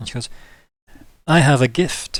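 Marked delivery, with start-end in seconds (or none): 1.3-2.2 slow, nearly flat, almost emotionless delivery. Voicing a character offering a gift from her throne: almost emotionless.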